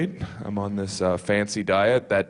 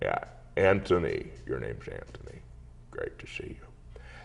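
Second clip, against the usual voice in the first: whispery, breathy, hushed put-on dad voice; 8 semitones lower, 10 dB quieter than usual. Doing an impression of his dad for his siblings, put-on dad voice. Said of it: "would do an impression of my dad who would be like".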